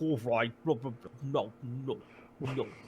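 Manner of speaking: low, soft, blubbering fish voice. Explaining a planned voice for a role-play character, speaker demonstrates a blubbery fish voice. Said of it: "make the voice sound like a blubbery fish".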